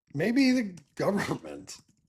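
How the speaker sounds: words pushed through laughter. Suggesting who might decide, laughing while talking. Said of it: "I can't even say that without laughing".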